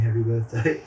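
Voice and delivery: plain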